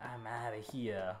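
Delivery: put-on low, quiet Brooklyn accent. Playing a game and voicing the character Shifty in a Brooklyn accent. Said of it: "Did he just get a Brooklyn accent?".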